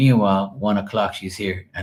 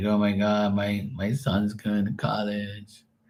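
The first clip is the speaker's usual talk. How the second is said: soft, slow, anxious, paranoid fretting; 5 dB quieter than usual. Retelling how a worried mother sounded, imitating nervous, paranoid worry. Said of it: "She's all nervous and paranoid".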